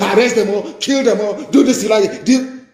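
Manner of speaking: mocking, high-pitched, mock-commanding voice.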